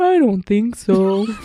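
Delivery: loud, sad, droopy, mopey clown character voice. Reenacting answering when asked for a name, in a put-on sad clown voice. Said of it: "sounded like Eeyore".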